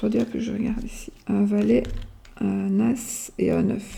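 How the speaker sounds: speaking very softly.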